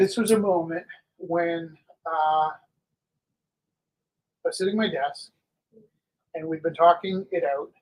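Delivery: choked-up voice catching with emotion. Teacher recalls a moment from the classroom, choked up. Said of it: "I'm getting choked up".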